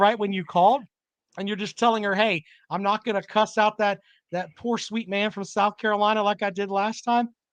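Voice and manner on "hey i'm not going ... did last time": plain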